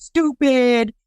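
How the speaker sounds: put-on mild yell with scolding tone. Speaker retelling how a man yelled at a woman, imitating someone yelling. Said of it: "He's yelling at her".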